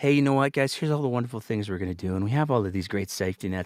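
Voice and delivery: really soft, gentle, soothing, comforting voice. Speaker acting out what Smith is saying in a video, in a really soft voice. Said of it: "I'm speaking in a really soft voice".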